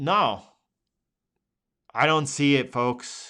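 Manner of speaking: deflated, disappointed, let-down delivery. Scanning currency charts for the audience and finding no edge, disappointed. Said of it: "do you hear the disappointment in the tone?".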